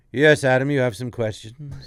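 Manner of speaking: deep, loud trained voice. Showing how drama school trains you to speak: deep trained lower-register voice. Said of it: "they want you to be, uh, like".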